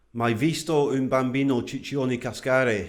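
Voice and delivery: Italian words spoken in a Scottish accent. Challenged to say an italian saying, he speaks it aloud: italian phrase in scottish accent. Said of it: "say an Italian phrase in a Scottish accent".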